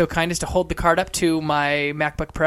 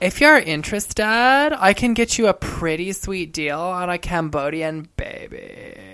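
put-on Valley girl accent and speech pattern. In an accent guessing game, a podcast host delivers a phrase: valley girl accent. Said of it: "Valley girl?".

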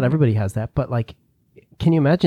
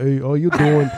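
imitated Brooklyn accent; 2 semitones higher than usual. Imitating a father from Brooklyn greeting someone: imitating a Brooklyn accent. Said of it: "my dad is from Brooklyn".

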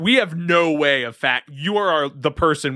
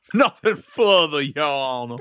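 put-on American Southern accent. Playing a humble Southern sea witch addressing Your Honor, in a Southern accent. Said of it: "Why are you Southern now?".

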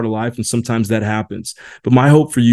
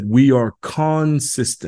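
put-on British accent; 2 semitones higher, 3 dB quieter than usual. Quoting a man from a group that has been around 47 years; British accent. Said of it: "here's what he said in his British accent".

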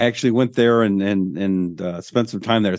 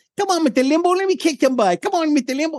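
dumb, squeaky, very high-pitched goofy boxer caricature. Retelling a stupid Mike Tyson impression done for a radio show. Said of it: "I do a stupid Mike Tyson impression".

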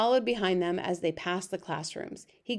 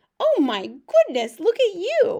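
very high, drawn-out, sing-song cooing; 11 semitones higher, 8 dB louder than usual. An old man lowers himself to a baby in a basket, cooing in a high voice. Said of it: "the old man cooed in a high voice".

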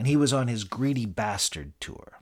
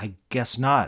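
timid, meek, humble submissive tone. A hotel room service attendant answers an angry man, meekly. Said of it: "I said meekly".

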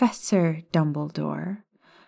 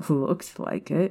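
amused, chuckling with a little laugh. Ron replies to Hermione in the train carriage, chuckling. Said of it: "Ron chuckled".

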